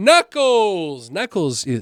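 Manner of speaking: thrilled, eager, excited voice with swooping pitch. Announcing movie news to viewers, getting louder with excitement. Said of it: "when I start getting louder".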